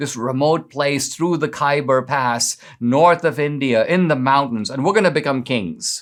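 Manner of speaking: usual speaking voice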